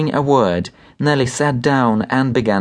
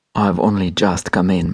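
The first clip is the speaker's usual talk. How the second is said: muttered, lower pitch; 5 semitones lower than usual. Narrator reading a doctor answering a woman whose husband has typhus, muttering. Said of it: "muttered the doctor".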